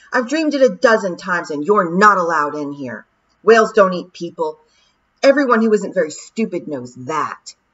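loud, angry shouted outburst. Back in her dream, she shouts at the sky: shouted in anger. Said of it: "she shouted at the sky".

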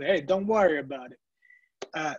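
strong, very Italian-sounding accent. Speaker noticing they sounded Italian and repeating the phrase: very Italian accent. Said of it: "I sounded very Italian".

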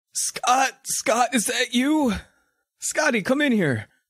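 very high-pitched, aged grandfather voice. A grandfather calls to his grandson scott from the living room, in an old man voice. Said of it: "Grandpa, you sound so old!".

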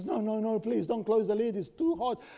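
mock pleading, begging woman's voice. Speaker retells a woman begging the deacons, imitating a pleading woman. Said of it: "and she says".

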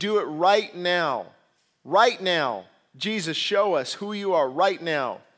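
mock haughty, slow, arrogant, insistent demanding tone. Retelling how people demanded a sign from jesus: imitating an arrogant challenge. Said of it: "almost an arrogant challenge".

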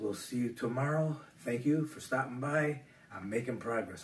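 speaking quietly. Signing off an update while a grandson sleeps nearby: speaking quietly. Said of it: "I'm being quiet because my grandson is sleeping".

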